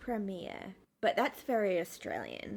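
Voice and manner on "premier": slow careful pronunciation, quieter. Showing another speaker how to pronounce a word: said really slowly. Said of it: "Can you say it, like, really slowly?".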